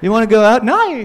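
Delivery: nai curling upward with rising lilt. Showing how even a simple question sounds in the accent, with rising upward inflection. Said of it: "there's like an upwards inflection".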